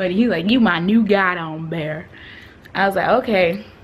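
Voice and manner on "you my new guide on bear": put-on thick, strong rural country accent. Retelling what a man said to them, in his strong country accent. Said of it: "he had the strongest country accent ever".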